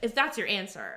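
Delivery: plain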